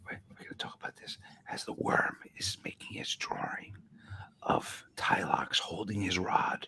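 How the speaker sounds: soft whisper. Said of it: "we're gonna whisper into the microphone".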